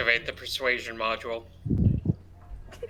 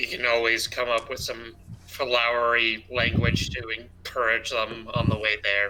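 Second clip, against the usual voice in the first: ordinary delivery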